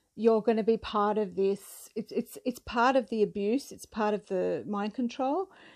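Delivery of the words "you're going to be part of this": usual speaking voice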